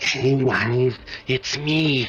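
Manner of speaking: put-on goblin voice. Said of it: "the goblin, he talks like this".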